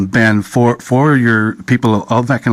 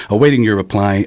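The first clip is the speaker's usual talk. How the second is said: usual speaking voice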